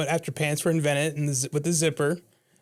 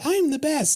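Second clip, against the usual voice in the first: character voice pushed very high in pitch; 12 semitones higher, 3 dB louder than usual. Imagining what a video game character says: Toad voice. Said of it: "It's like".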